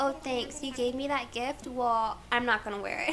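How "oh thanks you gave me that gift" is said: ordinary delivery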